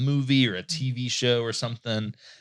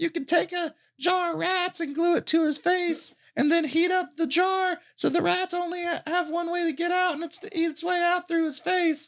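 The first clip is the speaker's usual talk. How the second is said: put-on very high small child's voice. Describing a clip where a little kid's voice comes on, in a little kid's voice. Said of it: "this little kid's voice comes on".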